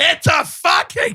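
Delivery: mock scream, barked out high. Retelling a boss covering the phone to yell at the secretary: imitating someone screaming. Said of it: "scream at the secretary and go".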